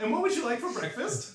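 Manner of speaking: exaggeratedly loud and very high voice. Acting out a woman taking a breakfast order: overly loud voice. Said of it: "in a very overly loud voice".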